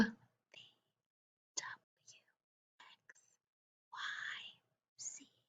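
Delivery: very quiet, very slow, soft whisper. Leading an alphabet warm-up, vowels said loud, consonants whispered: whispering the consonants. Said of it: "say them loud and pop up".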